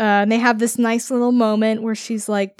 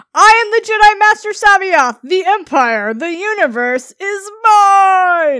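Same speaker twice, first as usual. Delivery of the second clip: put-on loud, high-pitched old man yelling rant, mine drawn out; 8 semitones higher, 6 dB louder than usual. Retelling a villain's grand boast: imitating C'baoth yelling. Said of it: "Old man yells at clown".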